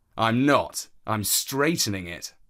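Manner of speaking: ordinary delivery, nothing marked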